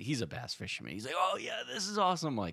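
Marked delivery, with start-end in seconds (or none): 1.2-2.3 very high-pitched, all-excited gushing reaction. Speaker quotes the bass fisherman's reaction to his catch: imitating his excitement. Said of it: "And he was all excited".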